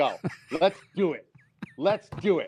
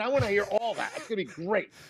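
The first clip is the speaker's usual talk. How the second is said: usual speaking voice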